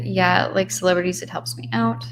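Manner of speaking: normal talking voice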